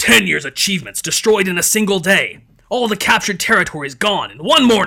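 put-on loud, roaring bellowing outcry. Narrating history, reading a quoted outburst aloud, bellowing it. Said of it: "He bellowed".

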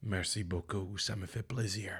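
put-on English accent with a Belgian tinge. Retelling what a man said after his phrase was translated, in a Belgian English accent. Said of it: "Avec un accent anglais belge".

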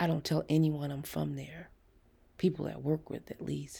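plain

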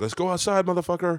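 put-on screeching, shrieking yell, pitched very high. Speaker retelling a fight they watched from a window: retelling a yell. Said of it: "This guy starts yelling at him".

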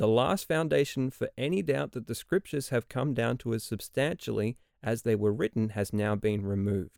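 ordinary delivery

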